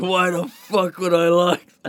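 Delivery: play-acted, high, stretched-out, drawn-out scream. Retelling a comedy sketch where a character refuses: imitating someone screaming. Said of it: "he's screaming at them".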